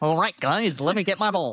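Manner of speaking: strange, odd, high-pitched put-on character voice. Imagining the other speaker being called in to play, voicing him in an odd put-on voice. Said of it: "I don't know why I'd sound like that".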